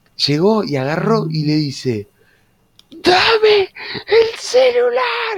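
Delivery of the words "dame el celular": mock very high, unhinged frantic yell, "Dame" drawn out. Telling a friend how someone ran across the classroom and grabbed things; imitating someone yelling wildly. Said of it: "empezó a gritar como una desquiciada".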